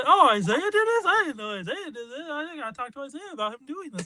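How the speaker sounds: overfamiliar chummy tone. Retelling a stranger's remark at the movie credits, imitating someone talking like he knows the director. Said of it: "he's talking like he knows this person".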